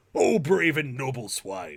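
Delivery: slow, loud creature voice. Repeating a line from a son's bedtime story: Bullywug voice. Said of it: "the Bullywug voice has creeped its way".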